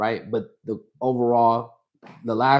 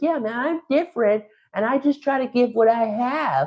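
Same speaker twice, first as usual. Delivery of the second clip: put-on squeaky, very high-pitched little-boy voice; 13 semitones higher than usual. Retelling what a young boy said to the speaker, imitating a high-pitched kid. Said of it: "he had a very high pitch".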